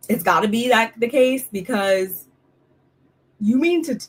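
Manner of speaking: speech interrupted by hiccups. Speaker talking about Giselle and Mia, hiccuping. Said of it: "all hiccups".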